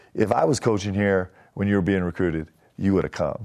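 imitated whisper. Retelling what a coach said on the drive to the airport: imitating Coach Rose whispering. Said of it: "he just kinda whispered to me, like, the way Coach Rose does".

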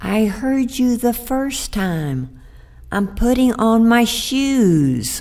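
put-on teeny, tiny little voice, "shoes" drawn out. Reading a story where a voice answers from inside a box, tiny little voice. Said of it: "a tiny little voice came out of the box".

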